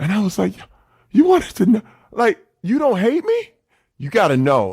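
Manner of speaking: choked-up voice catching with emotion, swooping. Recounting the moment it all came out, getting choked up. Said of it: "I know I'm getting choked up".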